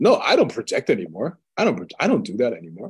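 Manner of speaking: mock self-assured know-it-all delivery, swooping and confident. Retelling what a man in a talk about spirituality answered: imitating someone saying it with confidence. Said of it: "he said it with such confidence".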